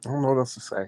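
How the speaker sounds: soft, tearful speech through crying. Speaking to Joseph, who asks why they're crying, crying while talking. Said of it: "Don't cry".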